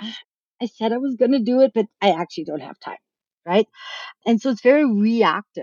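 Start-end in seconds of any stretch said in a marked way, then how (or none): 0.0-3.0 fast, rushed, meek and sheepish voice. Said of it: "very meekly and sheepishly say".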